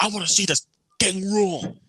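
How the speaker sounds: high, irate, angry yell. Retelling how a guy yelled right in another man's face; imitating someone yelling. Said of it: "is yelling right in his in Jacob's face".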